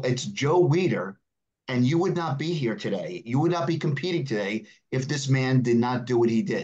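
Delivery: ordinary talk, nothing marked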